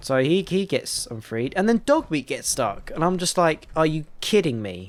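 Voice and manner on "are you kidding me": put-on annoyed, exasperated burst of disbelief. Retelling a game glitch that kept trapping a companion: retelling own annoyed outburst. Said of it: "I'm getting so annoyed at this point".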